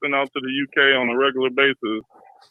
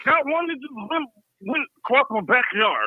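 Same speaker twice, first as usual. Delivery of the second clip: put-on drunk voice, higher pitched; 12 semitones higher than usual. Playing a caller talking about aliens, in a drunk-sounding LB impression. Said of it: "sound like a drunk version".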